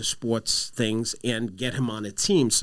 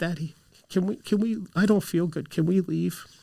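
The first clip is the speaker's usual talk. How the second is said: put-on scared, trembling, shaky, high little-boy voice; 6 semitones higher than usual. A father retells his uncomfortable son asking to leave, imitating Michael's shaky voice. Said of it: "he says to me with this shaky voice".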